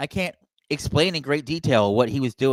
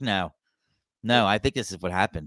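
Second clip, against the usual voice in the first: mock flat, earnest, low, straight-faced deadpan; 5 semitones lower, 4 dB quieter than usual. Imitating Bret Hart insisting he is serious: imitating Bret Hart's deadpan delivery. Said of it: "He says it so deadpan".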